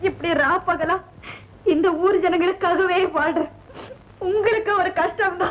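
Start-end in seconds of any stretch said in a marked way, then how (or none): 4.3-5.5 crying through the words. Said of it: "ஏன் அழற?".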